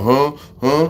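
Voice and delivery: loud, high, puzzled huh. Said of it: "some people go".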